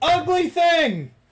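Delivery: very high, very loud, shrill jeering, taunting yell. Voicing a character baiting someone into coming out: taunting shout. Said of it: "I'm trying to bait her into coming out".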